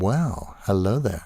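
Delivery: ordinary talk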